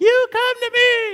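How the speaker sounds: very high, loud yell with a squeaky voice crack. Reading David's reply to the Philistine, speaker voices it cracking with a squeak. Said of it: "Maybe a little squeak in there".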